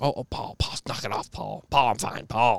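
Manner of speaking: put-on elderly woman voice. Retelling what the old lady kept saying to the old man, imitating an old lady. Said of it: "just like every old lady would".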